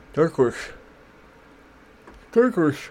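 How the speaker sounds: voice like an animated cartoon dog. Speaker talking about a yellow cover, sounding like a cartoon dog. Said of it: "I sounded like a. Cartoon dog".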